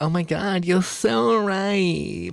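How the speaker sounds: very high, passive-aggressive, sarcastic, fake tone. Imitating a woman whose manner irks the speaker, imitating someone passive-aggressive. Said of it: "The passive aggressive, ... she's doing like this".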